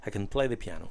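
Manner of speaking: word "can" light and unstressed. Teaching English affirmative sentences: light, unstressed can. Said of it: "pasan por el verbo casi como de puntilla".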